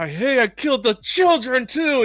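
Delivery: high yelling tirade that climbs. Retelling a scene where Anakin yells at Padme: imitating Anakin yelling. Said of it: "yelling at Padme".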